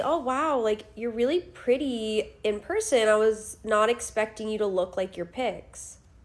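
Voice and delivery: ordinary talk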